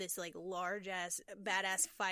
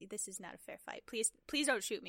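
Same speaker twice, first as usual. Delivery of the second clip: mock-angry grumbling, faster. Podcaster recapping a monster movie fight, voicing the frustrated monster, mock-angry complaint. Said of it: "He was just so mad".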